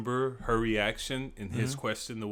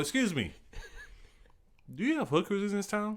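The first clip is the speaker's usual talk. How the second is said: mock dead-serious, blunt, matter-of-fact, pitched up; 10 semitones higher than usual. Retelling a friend asking the pizza lady a question: imitating a stone-faced question. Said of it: "just straight up, stone face".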